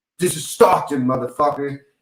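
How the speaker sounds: dead serious, every word meant. Retelling a fighter's threat before a fight: imitating Nick Diaz's serious tone. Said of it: "such a serious look".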